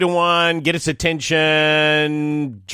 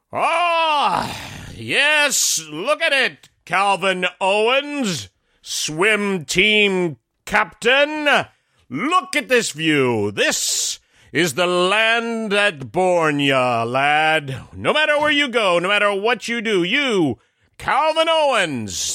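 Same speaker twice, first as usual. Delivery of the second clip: grand, theatrical stage-actor declaiming, pitched up; 5 semitones higher than usual. Speaking to the swim team captain about the river view, imitating Ned's projecting voice. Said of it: "in his most, you know, projecting voice".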